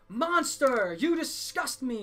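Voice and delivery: loud yelling. Voicing guards as the player passes through the city: yelling. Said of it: "yelling on the way".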